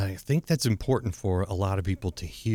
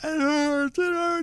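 put-on very high, drawn-out, hurt child sobbing. Retelling how a stung son came in crying: imitating a crying child. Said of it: "This is a hurt cry".

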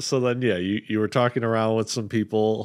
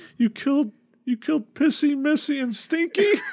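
put-on sad tearful goblin voice, much higher, slower. Retelling a game session where a little goblin learns the group killed its pets, imitating a crying goblin. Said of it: "And so a little goblin appears on opening this door and sees you guys just all getting ready to continue your adventure. ... it turns out it was the goblin that ran away from us was in there with a bunch of other goblins".

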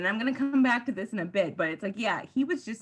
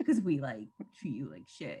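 put-on vaguely woke tone, lower and quieter; 8 semitones lower, 5 dB quieter than usual. Retelling a scene where Gwen speaks to Hawk: imitating Gwen's vaguely woke tone. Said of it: "vaguely kind of woke, but, like, not way".

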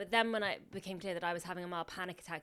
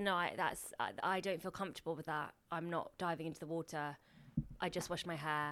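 ordinary delivery

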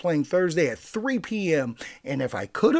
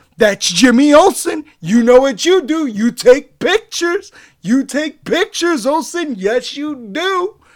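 very loud, high-pitched shout; 10 semitones higher, 10 dB louder than usual. Retelling a movie character's repeated line, retelling a shout. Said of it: "top of his lungs".

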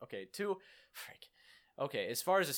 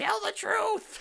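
very high, loud, creaky, raspy voice; 7 dB louder than usual. Joking about the lasso of truth: Wonder Woman voice. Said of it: "That sounds like Wonder Woman".

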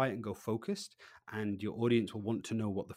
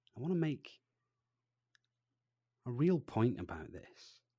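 dropped voice, deliberate unhurried pace; 3 semitones higher than usual. Demonstrating an expectant pause to make a point to an audience, voice down, slower pace. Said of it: "I bring my voice down and my pace slower".

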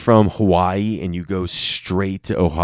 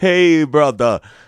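fake Jamaican accent, pitched up; 9 semitones higher, 4 dB louder than usual. Trying out a voice after a failed attempt, fake Jamaican accent. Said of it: "That's Jamaican, I think".

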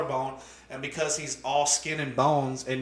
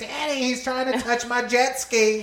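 very high, raised, spoiled bratty voice; 9 semitones higher, 5 dB louder than usual. Retelling a spoiled cousin complaining to her dad: imitating spoiled Ashley. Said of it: "Ashley was spoiled fucking rotten".

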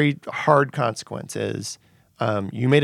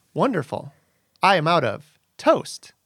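computery text-to-speech voice, pitched higher; 3 semitones higher than usual. Performing a requested character voice before the text-to-speech is added: Sophia voice. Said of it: "your Sophia voice".

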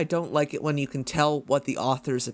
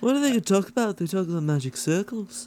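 put-on Scouse Liverpool accent, pitched up; 5 semitones higher than usual. A canadian speaker tries a liverpool accent impression. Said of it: "It's not a bad impression".

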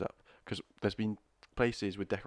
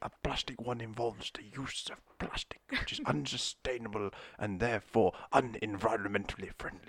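earnest nature-documentary narrator voice. Answering a question in character as a requested guest judge: David Attenborough impression. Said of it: "you requested a David Attenborough".

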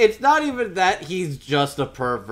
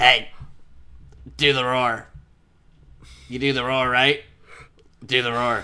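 mock kid voice, pitched really deep; 3 semitones lower than usual. Retelling a movie scene with a kid: imitating a kid's really deep voice. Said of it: "this one fucking kid with a really deep voice that's just like".

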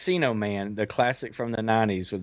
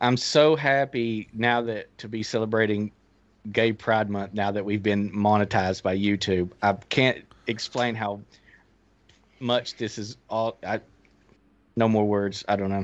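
plain

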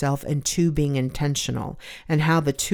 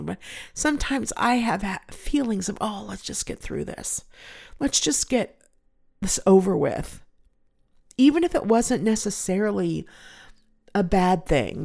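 emotional, moved, with feeling, slightly higher voice; 5 semitones higher than usual. The speaker is getting emotional while talking. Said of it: "I'm sorry I'm getting emotional".

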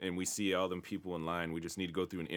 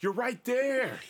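put-on yelling, higher and louder; 8 dB louder than usual. Retelling what they used to shout at tv charity ads: imitating own yelling. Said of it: "would always be yelling at the T V".

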